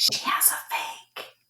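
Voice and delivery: hushed, secretive whisper.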